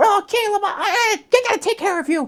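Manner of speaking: very high voice produced from the back of the throat. Showing how the Nott character sounds: high-pitched back-of-throat Nott voice. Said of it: "high-pitched, straight back of the, the throat type of accent".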